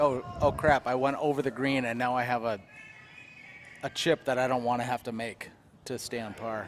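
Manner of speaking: ordinary talk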